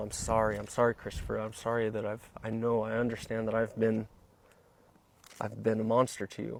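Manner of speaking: ordinary talk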